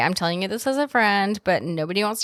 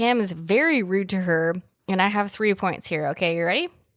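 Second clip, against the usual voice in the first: plain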